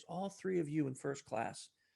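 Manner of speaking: soft, hushed, secretive half-whisper. Retelling what a woman half-whispered to Arisa after typing: retelling a half-whisper. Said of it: "and she whispers".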